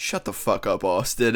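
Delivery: acted angry snapping reply. Retelling a man's reply to the speaker's teasing, retelling an angry retort. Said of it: "he just walked away so pissed off".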